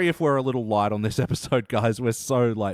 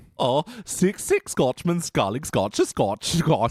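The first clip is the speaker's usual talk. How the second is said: put-on German accent, much higher; 3 semitones higher than usual. Asked to say the tongue twister again, trying it in a put-on German accent. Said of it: "Now say it with a German accent".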